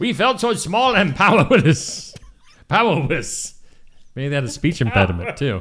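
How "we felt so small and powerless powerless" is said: slow, put-on fake German accent. Retelling a line the way a German would say it, in a put-on German accent. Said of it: "trying to do a German um, accent".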